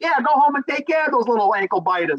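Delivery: put-on old-fashioned thirties man voice. Retelling a boss character's reply, old-timey 1930s man voice. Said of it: "he talks like thirties man".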